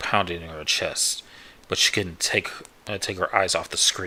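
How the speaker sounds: ordinary delivery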